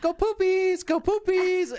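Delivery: put-on very high, silly baby voice. Walking behind the dog, the speaker repeats the stupid voice used with dogs. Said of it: "the stupid voice that you do with the dogs".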